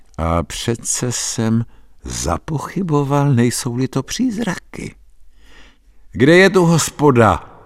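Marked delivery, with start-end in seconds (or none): 6.1-7.4 put-on shouted, high, loud, drunken-sounding yell. The narrator calls out to a group of boys, shouting like a drunk. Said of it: "Vykřikl jsem jako opilý".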